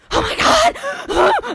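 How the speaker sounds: very high, loud, squealing, freaked-out shriek. Speaker recounts sitting beside Sarah at a movie trailer, imitating Sarah freaking out. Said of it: "has a conniption in the seat next to me".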